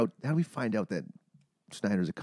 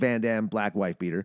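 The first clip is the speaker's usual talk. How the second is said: ordinary talk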